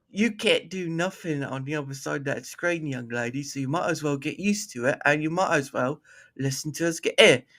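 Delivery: soft, put-on English accent done for fun. Doing accents on request, the speaker taunts a young lady in an English accent. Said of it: "she's the one that wanted the accents tonight".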